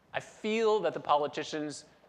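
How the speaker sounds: ordinary delivery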